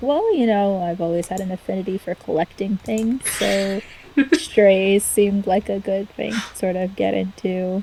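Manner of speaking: dry, glib, very flat deadpan monotone. Voicing a character answering a question about new friends: very deadpan delivery. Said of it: "very deadpan".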